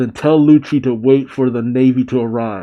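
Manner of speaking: usual speaking voice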